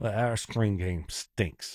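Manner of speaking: low, openly disdainful, contempt in every word. Discussing third-down play-calling on a show, speaking in a disdainful tone. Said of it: "Not hide the disdain".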